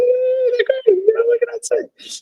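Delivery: voice leaping up very high. Act out his answer when asked about the alums, imitating his voice shooting way up. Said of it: "his voice went up like, like sixty levels".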